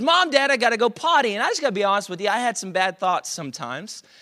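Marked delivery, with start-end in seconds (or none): 0.0-1.3 put-on high, loud child's yell. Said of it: "that was our son yelling out to us".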